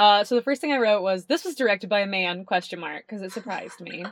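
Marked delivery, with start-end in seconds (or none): none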